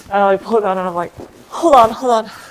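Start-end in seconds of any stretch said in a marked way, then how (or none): 1.5-2.2 high, loud, frantic, flustered, panicked delivery. Retelling being told to pull down pants for a shot: imitating own panicked self. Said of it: "So I was, like, freaking out".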